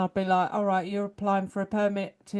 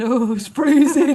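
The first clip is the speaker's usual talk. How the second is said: put-on very loud, high, complaining kid voice; 6 semitones higher, 10 dB louder than usual. Imagining children left outside in the snow: imitating cold children complaining. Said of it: "the kids are left outside going".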